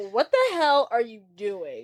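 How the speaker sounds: mock revolted, put-out, disgusted outburst. Retelling a guy's reaction when someone sits at his table, mock-disgusted. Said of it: "Joey's disgusted".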